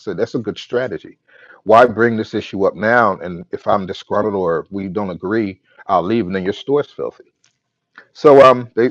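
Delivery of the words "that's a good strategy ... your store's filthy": ordinary talk, nothing marked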